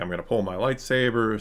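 plain

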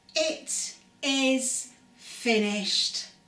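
clear, ringing, triumphant cry. Reading a story aloud, voicing his cry in a clear, triumphant voice. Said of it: "he called out in a clear, triumphant voice".

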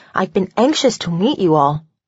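ordinary delivery

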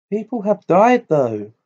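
high-pitched, anxious, uneasy, worried voice. Narrator reading a character's remark while climbing a staircase, worried voice. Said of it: "said Hermione in a worried voice".

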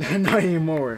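slow, loud, laughing mocking echo.

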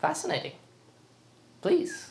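teasing, playful sarcasm, half-whispered, breathy and hushed. Responding to someone announcing a shower before going out: playful and sarcastic. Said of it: "That was playful and sarcastic".

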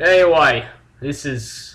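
Australian accent creeping in. Game walkthrough host fumbling his intro, sounding Australian. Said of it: "Now I sound Australian".

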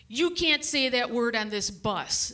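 normal talking voice

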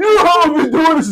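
loud, high-pitched hollering. Acting out a CIA agent in a sketch, yelling at others: acted yelling. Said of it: "He's yelling at you".

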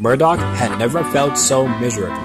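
ordinary delivery, nothing marked

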